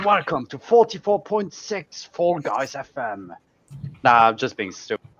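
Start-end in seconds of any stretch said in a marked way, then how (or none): 0.0-3.3 exaggerated, over-the-top FM radio presenter voice. Being silly after being asked about a radio voice: exaggerated radio presenter voice. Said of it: "Because that is a radio voice".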